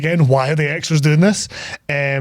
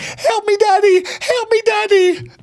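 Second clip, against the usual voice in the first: put-on screaming. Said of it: "she's just like".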